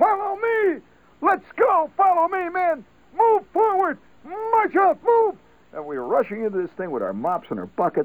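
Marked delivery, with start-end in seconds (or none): 0.0-5.4 mock, very high, shrill, drawn-out hollering. Retelling a first sergeant leading men with mops, imitating his hollered commands. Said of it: "he's hollering stuff like".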